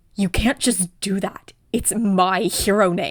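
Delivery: snapping harshly. Reading a story aloud, a character objects to a nickname: barking angrily. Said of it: "Katsuki barks".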